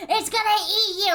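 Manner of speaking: high, loud, frantic, freaked-out, panicked voice. Retelling a mom's reaction to snake photos: imitating mom freaking out. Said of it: "she started freaking out".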